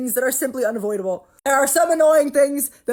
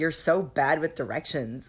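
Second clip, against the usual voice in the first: mock patronizing, condescending, talking-down tone; 10 semitones lower, 9 dB quieter than usual. Retelling a skit's boyfriend talking down to his girlfriend: imitating a condescending boyfriend. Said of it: "acting like she's stupid".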